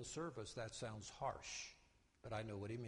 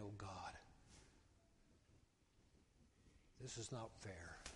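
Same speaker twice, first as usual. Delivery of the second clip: acted weeping, much quieter; 3 semitones lower, 8 dB quieter than usual. Telling listeners about driving on 26 and what he said; retelling weeping. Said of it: "I'm in that car and I'm weeping".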